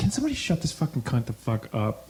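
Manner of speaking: mock fed-up, exasperated, swooping rant. Reenacting a past outburst demanding someone be shut up, acting out exasperation. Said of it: "No, it was like exasperated. It was like, ... Like that".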